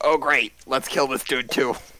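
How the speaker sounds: quiet under-the-breath mutter. A player narrates their character's reaction during the game, muttered under the breath. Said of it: "muttering under my breath like".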